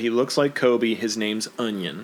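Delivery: ordinary delivery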